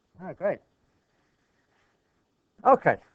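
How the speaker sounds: loud, relieved exclamation. Once a problem is cleared and things finally work: relieved. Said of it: "you can hear the relief in my voice".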